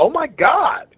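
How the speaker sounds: sweet-sounding very high cry. Retelling watching wrestling in the newsroom, imitating own sweet-sounding exclamation. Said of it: "That sounded really sweet".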